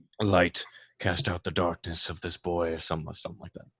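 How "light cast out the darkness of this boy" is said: mumbled, put-on character voice. Playing a cleric praying over a possessed boy: muttered prayer in character. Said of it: "you start muttering prayers".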